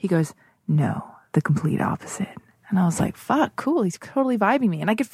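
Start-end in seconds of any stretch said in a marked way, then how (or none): 0.7-2.3 muttered, under breath, lower pitch. Retelling a man's answer to a question, retelling an under-breath reply. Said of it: "and under his breath".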